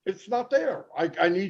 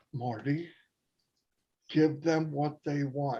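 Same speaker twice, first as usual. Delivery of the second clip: completely calm, settled, low and soft; 4 semitones lower, 8 dB quieter than usual. Speaker retells someone phoning in while a link was being shared, retelling a calm voice. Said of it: "called with a real calm voice".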